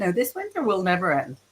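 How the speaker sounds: normal talking voice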